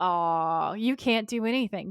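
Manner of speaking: mock sarcastic, acted-out sarcastic tone. Recapping a scene where one character answers another, mock-sarcastic retelling. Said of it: "very sarcastically goes".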